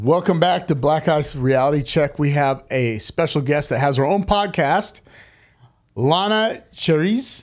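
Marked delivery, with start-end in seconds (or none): 6.0-7.4 put-on French accent. Introducing a podcast guest by name: French accent. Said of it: "I said it with a French accent".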